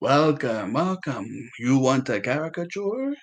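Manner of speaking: voice of a ghoul-like creature. Retelling how a ghoul creature greets visitors as they come up, in a ghoulish creature voice. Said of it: "some type of like ghoulish looking".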